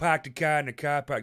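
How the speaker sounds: put-on Boston accent. Trading regional accents with another speaker, one tries a Boston-y accent. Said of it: "That's like a Boston-y thing?".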